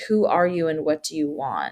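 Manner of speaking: ordinary talk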